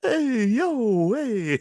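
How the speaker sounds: put-on Italian-American accent. Echoing the sock puppets' voices just described, Italian accent. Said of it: "their Italian accents".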